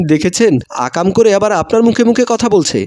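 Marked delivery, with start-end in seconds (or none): none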